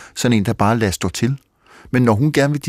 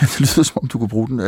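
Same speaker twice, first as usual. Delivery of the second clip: talking while laughing through the words. Replying to a question, laughing while speaking. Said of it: "Undskyld, jeg griner".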